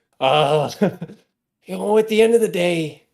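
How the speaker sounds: off-target voice drifting into cartoon housewife. Acting out a cast member in a terrible ad, do Carrie Fisher turned into Marge Simpson. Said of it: "I turned Carrie Fisher into Marge Simpson".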